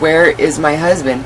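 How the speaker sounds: usual speaking voice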